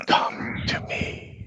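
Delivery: very quiet, faint, ghostly whisper. Voicing an apparition that calls the players into a tower: whispering voice in the mind. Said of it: "you hear a whispering in your mind".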